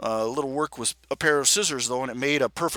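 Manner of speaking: plain reading voice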